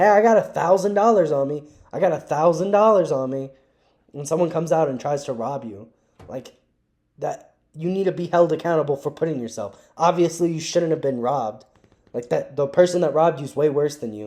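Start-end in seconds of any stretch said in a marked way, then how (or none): 0.0-3.5 loud, pitched-up hollering yell. Acting out someone in a dangerous part of town at night: acting out yelling. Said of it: "just start yelling".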